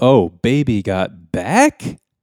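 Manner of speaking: pitch rising at the end. Retelling what a man said to a woman, with an upward inflection. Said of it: "with an upward inflection".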